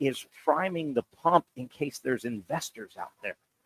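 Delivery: confiding, hushed half-whisper, kept low. Telling Casey something he doesn't want to say loud, half-whispering. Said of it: "I'm going to whisper to you".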